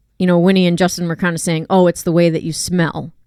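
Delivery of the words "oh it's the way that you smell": ordinary delivery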